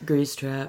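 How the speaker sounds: put-on mellow, laid-back chill voice. Imagining a chill character calling out his Grease Trap attack: mock-mellow, laid-back. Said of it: "it would just be so mellow".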